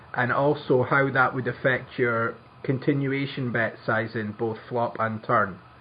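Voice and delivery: ordinary talk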